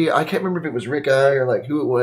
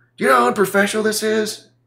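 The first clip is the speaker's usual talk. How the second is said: hot, furious yelling at a high pitch; 8 semitones higher than usual. Retelling how the engineer came at him to shut the band down, imitating someone yelling. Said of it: "he's all yelling".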